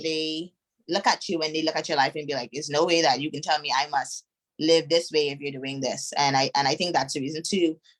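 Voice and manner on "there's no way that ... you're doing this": plain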